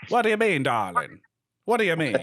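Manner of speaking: put-on swooping, high old-Hollywood transatlantic accent. After saying they love the transatlantic accent, the speaker demonstrates it: transatlantic accent. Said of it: "transatlantic not doing it for you".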